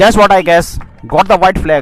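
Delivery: high, loud, excited commentator-style calling out.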